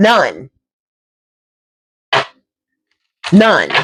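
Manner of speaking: sassy, swooping voice full of attitude. Reassuring a listener there's no reason to be sad, answering with attitude. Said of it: "I had to say it with that type of attitude".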